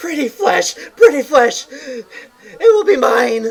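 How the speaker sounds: very high, very loud, shrill, piercing monster yell. Voicing an attacker who runs at the player and swings, yelling.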